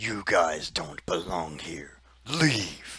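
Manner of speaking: very loud, thundering, booming voice. Game master voicing a voice the players hear, ordering them away; very loud booming voice. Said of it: "a very loud, booming voice".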